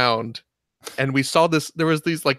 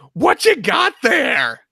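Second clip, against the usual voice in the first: mock scream at top of lungs, higher, louder; 11 semitones higher, 5 dB louder than usual. Retelling shouting at two passing guys at midnight: imitating screaming at top of lungs. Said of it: "we just start screaming at the top of our lungs".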